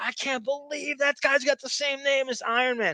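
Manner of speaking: high, screamed-out outburst. A comic book fan retells screaming that nobody cared about Iron Man; retelling own screaming. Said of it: "I was screaming like".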